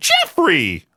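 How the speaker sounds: put-on upset scolding shout. Doing an impression of his mom calling his dad, imitating mom's upset shout. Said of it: "gets extremely upset with my dad ... with that tone of voice, too. I think I nailed the impression of my mom".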